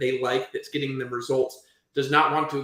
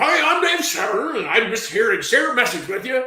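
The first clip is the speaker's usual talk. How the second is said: very high, loud, heavily inflected, swooping, rehearsed-sounding delivery; 10 semitones higher, 6 dB louder than usual. Speaker mimics how a man inflects his voice on old tapes, doing a Dave Severn impression. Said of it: "and the way he inflects his voice".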